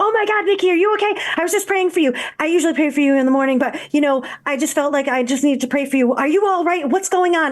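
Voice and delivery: fast, high, rapid-fire rattled-off stream of words. Speaker retells her mom answering the phone, talking really fast. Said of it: "I'm going to talk really fast because this was my mom".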